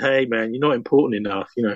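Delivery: acted-out quiet mutter under the breath. Photographer recalls what he said to a man being photographed, retelling an under-breath mutter. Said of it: "I actually said under my breath".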